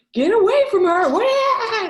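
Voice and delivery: very high, very loud, shrill yell, drawn-out "what". Yelling in character at a big dog to get away from her: yelling at a beast. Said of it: "I'm gonna yell at this big bad boy".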